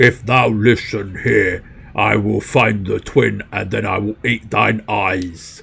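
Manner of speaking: angry ogre character voice. Narrator voicing Draknar the ogre as his face turns red, angry ogre voice. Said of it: "His great hideous face turns red".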